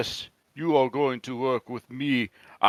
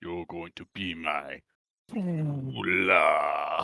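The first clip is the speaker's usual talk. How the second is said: evil spell-casting voice, lower; 7 semitones lower, 4 dB quieter than usual. Voicing a character who says the line to a young otter: casting an evil spell. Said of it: "supposed to be like an evil spell".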